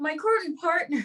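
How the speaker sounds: put-on Irish accent.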